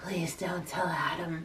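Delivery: hushed, very quiet, low voice. Retelling what a housemate said, imitating Kira. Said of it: "my Kira voice is too good".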